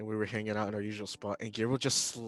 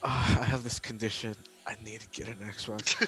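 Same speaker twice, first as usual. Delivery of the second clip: mock disappointed, heartbroken tone. Retelling how a friend announced getting an Xbox: imitating disappointed friend.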